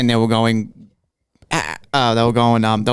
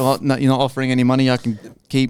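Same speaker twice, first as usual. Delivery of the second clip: normal talking voice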